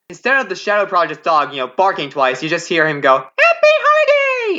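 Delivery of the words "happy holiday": high-pitched, loud character voice. Describing a Christmas special scene, saying the greeting in the Trilo voice. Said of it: "in the Trilo voice".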